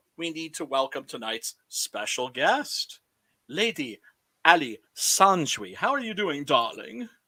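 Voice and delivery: affected British accent, put on. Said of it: "Why did you say my name like that?".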